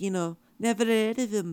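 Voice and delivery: Liverpool accent. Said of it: "they talk like this".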